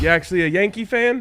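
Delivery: put-on heavy New York accent, laid on. Retelling a guy's question to a Yankee-hat wearer on the train: heavy New York accent. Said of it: "a heavy New York accent is like".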